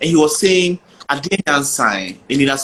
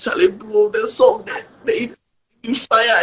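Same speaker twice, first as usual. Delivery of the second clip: put-on tearful, crying voice, higher pitch; 7 semitones higher than usual. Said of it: "I'm crying".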